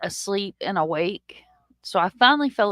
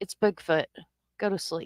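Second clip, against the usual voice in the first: mock casual, unbothered, nonchalant, offhand tone; 4 dB quieter than usual. Retelling a friend's reply after being woken at night: imitating a nonchalant reply.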